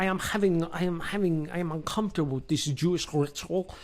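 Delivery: laid-on put-on German accent. Retelling a film scene, voicing Dietrich's line: put-on German accent.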